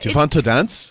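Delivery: put-on Dutch accent, second attempt. Retrying the husband's dance invitation after being told it wasn't Dutch: second try at a Dutch accent. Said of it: "Is that better?".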